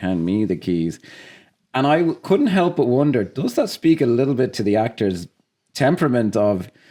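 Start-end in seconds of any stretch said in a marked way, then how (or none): 0.0-1.0 dead flat, psychopathic deadpan, no giggling. Retelling how Kevin Spacey delivers a line in a scene: flat psychopathic Kevin Spacey delivery. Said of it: "with this flat, psychopathic demeanor".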